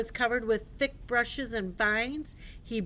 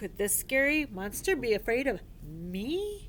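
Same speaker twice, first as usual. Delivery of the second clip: ordinary delivery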